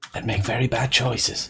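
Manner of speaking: under-the-breath whisper. Quill mutters a line under his breath, whispering under breath. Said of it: "Quill will sort of be whisper speaking".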